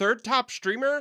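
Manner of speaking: high, loud, amazed, excited, disbelieving tone.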